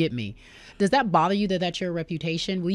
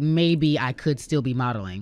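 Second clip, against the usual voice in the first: ordinary talk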